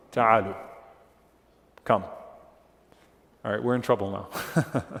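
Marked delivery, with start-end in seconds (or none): 0.2-2.1 put-on firm, stern, commanding call. Speaker retells the Prophet calling out to people mocking the adhan, retelling a stern command. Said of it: "then in a stern voice".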